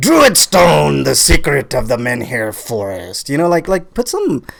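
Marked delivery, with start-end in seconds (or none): 0.0-3.3 Celtic warrior voice, full of gusto. Showing a co-host how to read the title: like a Celtic warrior, with gusto. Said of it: "You gotta say it like you're a Celtic warrior".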